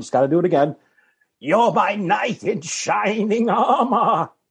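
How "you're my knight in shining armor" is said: put-on shaky, quavering, very slow, high-pitched elderly voice. Doing one more impression from a golden pond scene: Katharine Hepburn impression. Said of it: "My impression of Katharine Hepburn on an old golden pond".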